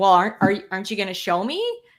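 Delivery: put-on rude old woman voice. Retelling what a rude old lady demanded, imitating a rude old lady. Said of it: "that was literally how she said it".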